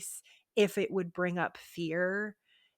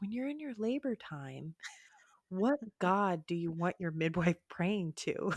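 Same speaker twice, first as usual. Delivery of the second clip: put-on gentle, mild, soothing voice. Recalling what Mike said at the tipping point, gentle Mike voice. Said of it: "this is the gentle Mike voice".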